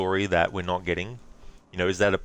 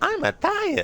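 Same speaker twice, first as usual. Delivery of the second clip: very high-pitched cartoon character voice with Italian accent; 3 dB louder than usual. Streamer recalls idle Nintendo 64 Mario, then does Mario impression. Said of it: "Mario would be like".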